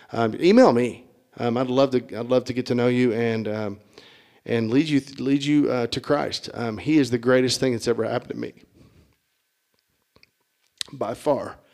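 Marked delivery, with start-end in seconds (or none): 6.8-11.6 choked up, emotional, much faster. Speaker invites listeners to faith in Christ, getting choked up. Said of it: "I got a little choked up".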